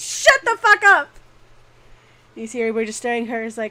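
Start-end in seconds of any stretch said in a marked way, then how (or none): 0.0-1.1 furious, shrill, very loud drawn-out screaming. Acting out a woman woken at 3 in the morning, retelling an angry shout. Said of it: "she's all pissed".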